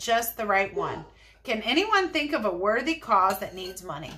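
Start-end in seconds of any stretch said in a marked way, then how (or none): none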